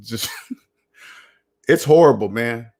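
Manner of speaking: words broken up by laughter. Speaker addressing a group directly, laughing while talking. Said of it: "I don't mean to laugh at you".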